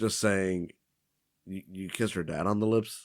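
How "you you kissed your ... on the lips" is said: ordinary delivery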